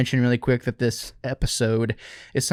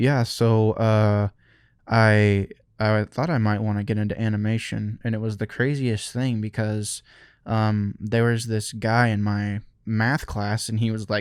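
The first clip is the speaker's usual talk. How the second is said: level, flat, monotone interview-style drone; 2 semitones lower than usual. Act out how a funny guy talks in interviews about getting into animation, imitating a monotone interview voice. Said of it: "the most monotone interview ever".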